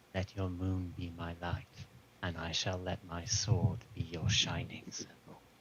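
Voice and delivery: very low, hushed half-whisper. A character holds it close to his lips and half-whispers. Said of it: "he just whispers".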